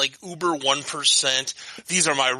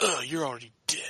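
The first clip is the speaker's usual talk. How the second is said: put-on too-cool, moody, angsty edgy teenager voice; 7 dB quieter than usual. Mocking a middle school edgelord who just left Hot Topic: mocking edgy teenager attitude. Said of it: "it even had that kind of attitude".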